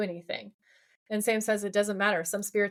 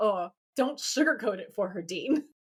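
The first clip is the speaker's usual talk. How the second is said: put-on exasperated voice. Retelling a scene, imitating Sam's exasperated reply: exasperated Sam impression. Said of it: "Sam is completely exasperated".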